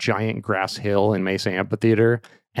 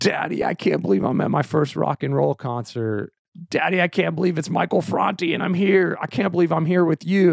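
put-on acted high, gushing, overwhelmed, giddy kid chatter; 8 semitones higher than usual. Father recalls his daughter at her first concert with him; imitating his overexcited daughter. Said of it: "like overwhelmed with excitement".

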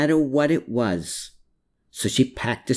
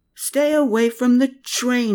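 shrieked, very high scream; 11 semitones higher, 3 dB louder than usual. Narrator voicing a man calling out to a woman, screamed. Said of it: "he screamed".

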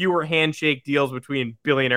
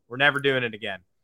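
usual speaking voice

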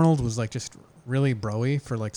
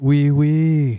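put-on Austrian accent, higher and louder; 3 semitones higher, 8 dB louder than usual. Imitating the film character speaking French: Arnold Schwarzenegger accent.

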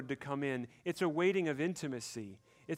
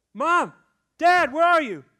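put-on frightened child's scream, much higher, louder; 6 dB louder than usual. Speaker describing children waking from a nightmare: imitating a scared child screaming. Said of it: "where do they scream out?".

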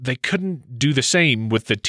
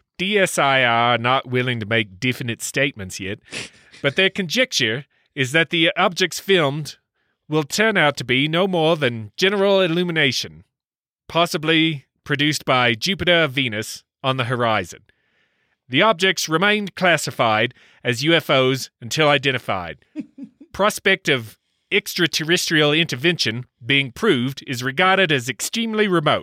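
deliberately poor, very bad fake New Zealand accent; 4 semitones higher than usual. Reading out a quote from a report, in a very bad New Zealand accent. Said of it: "let's try a very bad New Zealand accent".

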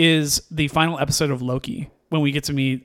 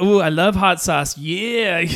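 put-on high, silly, immature teenage-girl voice; 5 semitones higher than usual. Describing an assassin character, the speaker is imitating a silly teenage girl. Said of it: "that silly kind of almost teenage kind of immature kind of girl".

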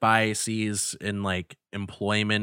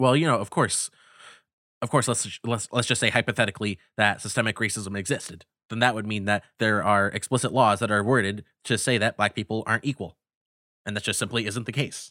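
fast, rattled-off, debater-style delivery. Imitating a commentator arguing against systemic racism: Ben Shapiro impression. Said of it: "your Ben Shapiro impression is just, it's too good".

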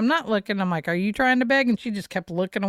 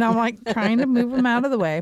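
ordinary delivery

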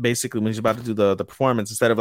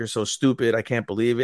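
put-on crying voice. Retelling a scene where a character begins to cry: imitating a character crying. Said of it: "He begins to cry, like".

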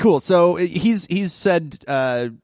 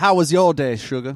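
put-on New Orleans accent. Voicing a character, a father greeting his daughter: New Orleans accent. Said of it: "we should really New Orleans up his accent".

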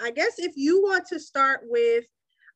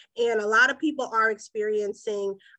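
ordinary talk

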